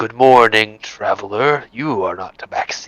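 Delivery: hissing, slithering snake-like voice. Voicing a snake-like creature greeting a traveler: slithering accent. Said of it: "in a sort of slithering accent".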